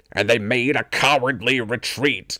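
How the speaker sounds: deep, low, booming villain voice. Narrating an episode as Shredder, say it in a Shredder voice like Ian McKellen. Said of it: "my Shredder sounds like Ian McKellen".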